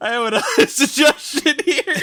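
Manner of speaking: laughing while talking. Bringing up another suggestion to the other speaker, laughing while talking. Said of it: "I keep laughing now".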